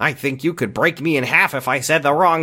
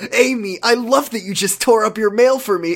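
high, pitched-up, nice happy character voice; 6 semitones higher than usual. Asked for a new take, the voice actor performs a nice happy Ricky voice. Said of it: "Can I hear nice happy Ricky?".

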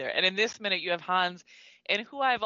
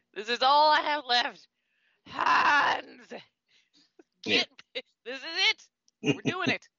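throaty, guttural growling delivery; 7 semitones higher, 4 dB louder than usual. Describing a character's last-ditch plan, voicing him in a put-on guttural growl. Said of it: "a guttural growl of".

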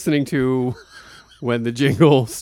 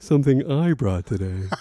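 put-on preening, showy, show-off delivery; 4 dB quieter than usual. Mocking another speaker's line: imitating a peacocking tone. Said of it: "'cause that's your tone".

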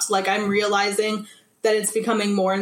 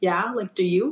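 put-on confused, puzzled speaking voice. Retelling a reply to a girl's question at the school lockers: imitating own confused reply. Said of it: "I just looked at her super confused".

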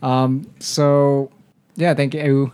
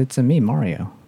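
normal talking voice

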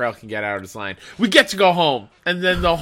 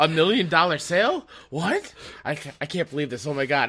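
put-on freaking-out voice, higher; 4 semitones higher, 4 dB quieter than usual. Retelling a sitcom scene about a million dollar sale: imitating someone freaking out. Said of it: "And they both start freaking out".

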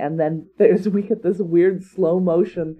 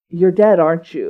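put-on menacing hissing cat voice, louder; 5 dB louder than usual. Retelling how the cat speaks to a caught rabbit: imitating a menacing hissing cat. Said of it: "she's very menacing".

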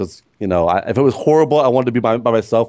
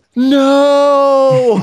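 put-on very high, drawn-out, heartbroken crushed child's cry; 6 dB louder than usual. Retelling a son's reaction to a film scene: imitating a crushed child's cry. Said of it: "He was crushed".

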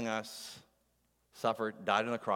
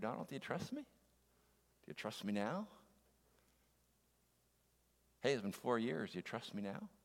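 soft, hushed stage whisper; 2 semitones higher, 7 dB quieter than usual. Acting out God speaking in the waiting time: half-whispering as God. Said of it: "he whispers in my ear".

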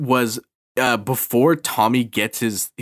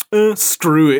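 put-on goofy monster voice, higher and louder; 4 semitones higher, 5 dB louder than usual. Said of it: "What is with that monster's voice?".

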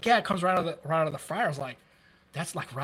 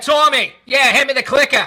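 very loud, high-pitched put-on Boston accent; 7 semitones higher, 11 dB louder than usual. Speaker who spent time in Boston demonstrates a fake Boston accent. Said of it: "I can almost fake it".

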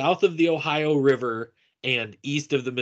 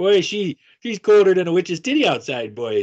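mock Minnesota accent, higher, louder; 5 semitones higher, 4 dB louder than usual. Showing the difference between Dakota, Minnesota and Canada accents, mock Minnesota accent. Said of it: "difference between like North Dakota, Minnesota".

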